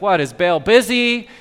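put-on snide, scoffing, sarcastic, mocking tone. Speaker retelling how Elijah mocked the people he listened to, acting out Elijah's mocking. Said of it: "he starts to mock them".

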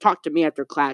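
ordinary talk

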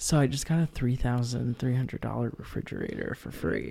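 low, hushed, confiding voice, kept down. Telling another speaker about getting a free refrigerator: talking low. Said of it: "Why are you talking so low".

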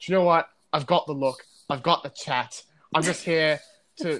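put-on loud, brassy Essex accent. Acting out one of those brash, overly confident guys, as a Kem impression in an Essex accent. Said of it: "the Essex accent".

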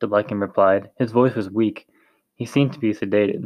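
ordinary delivery

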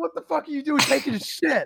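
mock all-out high-pitched screaming. Speaker retelling yelling at a man in a back alley, retelling a scream. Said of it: "I was screaming".

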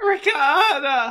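put-on cracking yelp on ricotta, very high, loud. Shouting a food name as a joke bit: put-on voice crack. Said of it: "make my voice crack longer in succession".

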